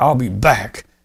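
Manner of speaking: stern, firm voice. Retelling what a police officer said after handing back a license: imitating a stern officer. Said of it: "she said it very stern".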